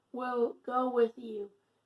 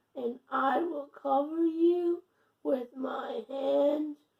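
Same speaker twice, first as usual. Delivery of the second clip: voice cracking and breaking mid-line; 2 semitones higher than usual. Reading scripture aloud, voice cracking. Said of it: "my voice is cracking".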